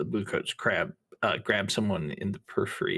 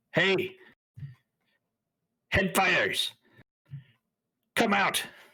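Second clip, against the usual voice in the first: loud yelling, much higher pitched; 11 semitones higher, 4 dB louder than usual. Narrator voicing someone outside the train car calling the headfighters out, yelling. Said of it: "You hear someone yell".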